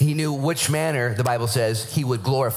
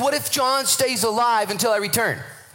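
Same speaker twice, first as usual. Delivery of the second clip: very high, biting, sarcastic delivery; 11 semitones higher than usual. Retelling a Bible scene, quoting Jesus: imitating sarcastic Jesus. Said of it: "He says something completely sarcastic".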